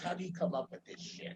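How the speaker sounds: soft, quick, flat deadpan delivery. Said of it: "gives her legendary deadpan look and says".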